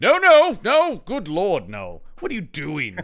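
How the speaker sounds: slow scolding with big pitch swoops. Retelling a film scene, imitating Christopher Lee chastising someone. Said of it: "Christopher Lee going".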